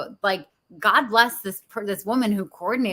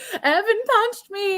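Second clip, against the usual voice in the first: put-on tearful kid voice, very high crying whine; 12 semitones higher than usual. Retelling a child's complaint at recess: imitating a crying child. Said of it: "he's, like, crying".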